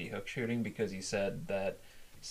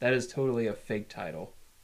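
usual speaking voice

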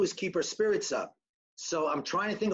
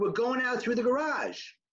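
light, called-back yelling voice; 5 semitones higher than usual. Retelling own answer to a stranger: retelling own yell. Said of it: "So I yelled back".

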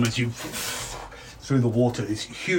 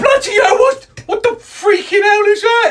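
very high, very loud, alarmed, panicked yell; 10 dB louder than usual. Voicing guards who see a huge crocodile appear: panicked guard voice. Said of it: "A couple of the guards nearby go".

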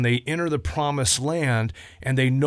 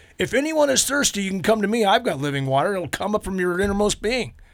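bold, high, proclaiming shout; 7 semitones higher than usual. Describing a solemn crowd in a Bible scene, retelling a shout. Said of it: "He shouts".

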